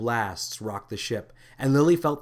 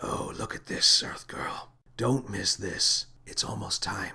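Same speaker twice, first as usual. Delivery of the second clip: dark, hoarse, breathless whisper; 3 semitones lower, 4 dB quieter than usual. Narrator reading the space captain whispering to the earth girl, hoarse whisper. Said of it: "With the fate of the Universe hanging in the balance, can a little earth girl and a mad space captain save the day? / He was facing away from her, / said the captain".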